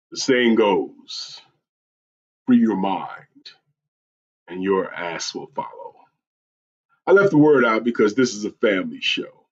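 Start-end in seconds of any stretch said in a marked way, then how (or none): 0.2-6.0 hushed, breathy, whispered character voice. Reading a quote aloud, attempting Mark Greer voice. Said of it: "my attempt at Mark Greer voice".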